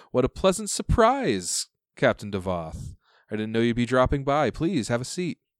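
smiling, animated voice. Narrator voices Tessa greeting Captain Devoth in her study: Tessa, smiling. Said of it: "she smiles and says".

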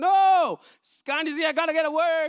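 put-on irritated retort. Telling an example of being asked to take out trash: imitating snapping back angrily. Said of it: "You snap back and like".

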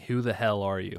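plain

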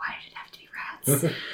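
very quiet, fast whispered mutter under the breath. Voicing a character who sees skeletal rats: muttering very quietly. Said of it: "Theo mutter very quietly".

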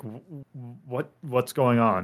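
concerned, worried, stammering speech. Voicing a character who gets concerned: concerned, stammering. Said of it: "his concern is like".

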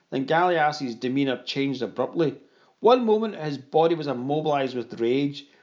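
ordinary delivery

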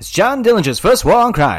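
put-on big, old-time 1930s announcer style. Reading out a quiz question, in a 1930s announcer voice. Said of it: "pay attention to my 1930s announcer voice".

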